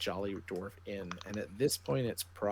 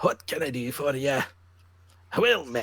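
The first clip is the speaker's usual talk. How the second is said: very loud, cheerful, booming, pitched-up dwarf voice; 5 semitones higher, 11 dB louder than usual. Voicing the gray-haired dwarf behind the bar greeting you, World of Warcraft dwarf voice. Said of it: "in my best World of Warcraft dwarven voice".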